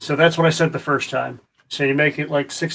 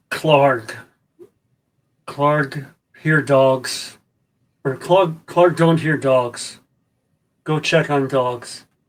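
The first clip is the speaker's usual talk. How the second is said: inhuman, non-human monster creature voice. Voicing a creature overheard giving an order: non-human creature voice. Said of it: "you can tell just by the voices that they're, they're not human".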